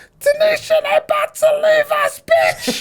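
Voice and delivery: loud yell. Retelling how a passenger at the terminal door called her friend: imitating a woman yelling. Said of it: "starts yelling from the top of her lungs".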